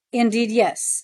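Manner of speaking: ordinary delivery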